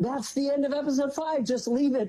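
acted-out yelling outburst, pitched very high. Retelling their reaction to the end of episode five, retelling yelling. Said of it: "So I'm yelling".

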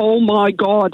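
put-on Derry accent. Retelling hearing a cousin from Northern Ireland exclaim from the other toilet, thick Derry accent. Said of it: "in a really thick Derry accent".

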